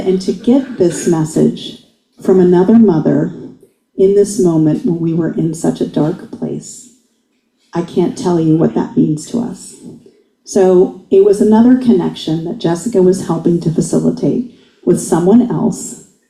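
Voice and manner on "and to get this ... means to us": ordinary talk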